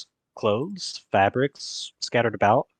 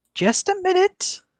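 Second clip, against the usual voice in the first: tiny, small, piping voice, very high; 4 dB louder than usual. As an old woman calling from behind a shop counter, a small voice. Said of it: "you hear a small voice from behind the counter".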